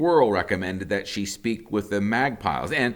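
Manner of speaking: plain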